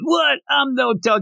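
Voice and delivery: put-on very high, drawn-out, hurt, indignant offended tone. Retelling a man's reaction after a woman says his face looks like her dog, mock-upset protest. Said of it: "He gets all upset".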